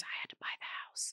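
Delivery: whispered speech. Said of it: "and he was whispering".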